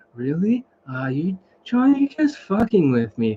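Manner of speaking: very relaxed, easygoing voice. Retelling a guy doubting john's praise of his voice, imitating a very chill voice. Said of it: "the most chillest voice in the world".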